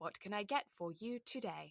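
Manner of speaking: car navigation announcer voice. Retelling serving cafe customers for a good part of a shift: imitating a sat nav voice. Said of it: "my sat nav voice".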